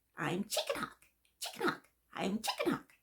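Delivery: quick, soft, swooping sing-song parrot voice. Imitating a green cheek conure's usual phrase, in Chicken Hawk's high parrot voice. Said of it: "in a really high-pitched voice".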